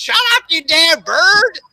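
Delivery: very high, loud, squawking mock parrot voice. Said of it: "the bird would just mock her back".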